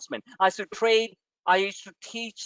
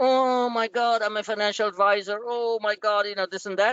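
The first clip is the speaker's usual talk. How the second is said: lifeless, dull voice with no life. Mocking how the listener sounds, telling them to sound alive: imitating a lifeless, dull voice. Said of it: "stop sounding so like".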